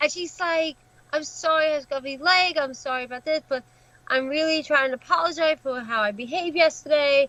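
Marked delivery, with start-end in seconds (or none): none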